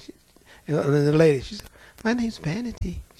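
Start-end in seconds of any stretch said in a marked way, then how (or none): 2.0-3.0 sugary, sweet, ladylike, demure voice. Retelling what a demon said when asked its name: imitating a sweet, demure voice. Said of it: "She sounded just as sweet and demure".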